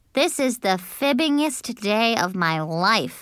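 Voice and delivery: ordinary talk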